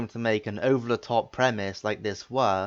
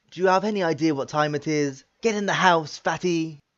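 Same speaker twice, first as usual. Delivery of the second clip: sharp, aggressive, pitched-up scolding; 6 semitones higher than usual. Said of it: "him yelling at Chris".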